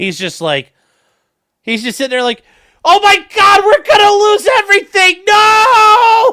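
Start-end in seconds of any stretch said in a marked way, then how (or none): 2.9-6.3 very high, drawn-out screaming wail. Acting out what someone is silently screaming at her: imitating someone screaming. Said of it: "screaming at her in his mind like".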